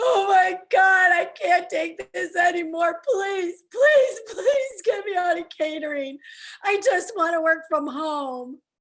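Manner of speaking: acted, high, weepy pleading through crying. Retelling a private meltdown at work, imitating own past crying. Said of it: "just crying, going".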